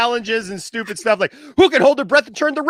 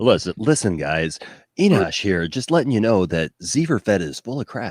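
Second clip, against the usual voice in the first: very deep, low radio announcer delivery; 11 semitones lower, 3 dB quieter than usual. A host mimics Enosh delivering news to the group, Enosh radio voice. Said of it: "With the radio voice".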